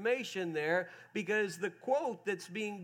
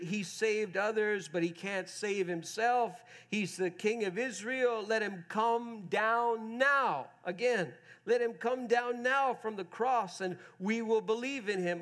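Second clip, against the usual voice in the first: usual speaking voice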